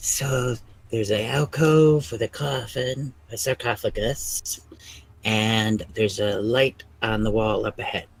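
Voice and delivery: hushed whisper. A character peeks around a corner and reports back, whispering. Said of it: "he kind of whispers back".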